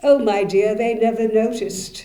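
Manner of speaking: put-on very loud, lofty, haughty upper-crust British accent. Speaker quotes a friend's reply to a question, in a haughty British voice. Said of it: "she replied in her most haughty British voice".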